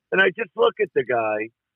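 ordinary delivery

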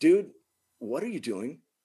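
level, unruffled, calm, even voice. Recounting a man holding their foot, the speaker retells their words in a calm, even voice. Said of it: "So I say like in a calm, even voice".

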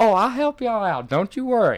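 put-on very high, sweet, kindly little old lady voice. Retelling what the sweetest old lady at the blackjack table said: imitating the sweet old lady. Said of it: "the sweetest old lady was sitting next to us".

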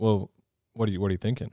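put-on flat deadpan tone. Retelling how people answered a man's reaction, imitating a deadpan reply. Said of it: "they're kind of like just deadpan".

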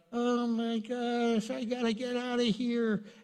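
flustered panic, high-pitched and slowed down.

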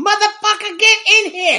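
put-on, very high-pitched screech, screaming. Joking about a Disney Plus Nick Fury series, imitating Nick Fury screaming. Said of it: "he screams at them and goes".

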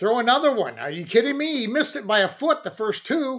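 play-acted shouting, high and rising in pitch. Watching a pitcher on tv, the speaker acts out retelling yelling at the tv. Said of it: "i'm like yelling at the tv screen".

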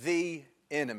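stress on THE in the enemy.

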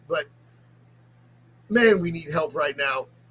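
very low, hushed voice, emotion rising. A pastor speaking about a long conversation with other pastors, getting emotional. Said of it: "I'm getting emotional".

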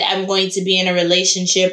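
plain

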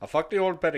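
attempted accent that comes out Indian. Speaker attempts a quote, in a failed accent that came out Indian. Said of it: "No, that was Indian".

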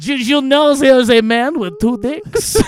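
bad, silly put-on French accent, high and loud. Showing how a joke is delivered the second time: silly french accent. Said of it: "The French accent".

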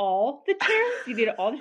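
incredulous, disbelieving tone.

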